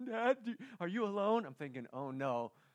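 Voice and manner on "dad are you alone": put-on tearful, crying voice, pitched up. Father retelling his daughter's phone call to him, imitating her crying. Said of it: "she's crying a little bit".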